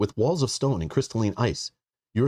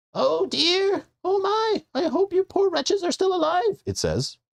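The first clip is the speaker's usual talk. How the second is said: scratchy put-on voice, much higher. Reading a character's greeting to arriving visitors aloud, scratchy and high-pitched. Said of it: "scratchy and high-pitched".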